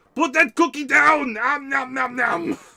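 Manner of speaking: high greedy monster voice. Answering a chat request for a voice: Cookie Monster as Arnold Schwarzenegger. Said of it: "Cookie Monster as Arnold Schwarzenegger".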